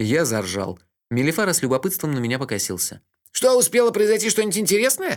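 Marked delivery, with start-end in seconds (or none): 3.3-5.2 called out very loudly and high-pitched. A man sitting beside the narrator during music turns and asks him something; very loud question. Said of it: "очень громко спросил он".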